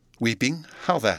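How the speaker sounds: ordinary delivery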